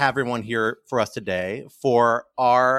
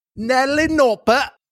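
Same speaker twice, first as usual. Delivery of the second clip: terrible, exaggerated, put-on Cockney accent; 13 semitones higher, 5 dB louder than usual. Taking a turn at name jokes, saying the name in worst exaggerated Cockney accent. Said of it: "in my worst absolute Cockney accent".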